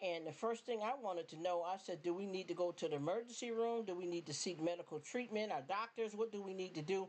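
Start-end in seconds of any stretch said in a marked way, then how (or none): none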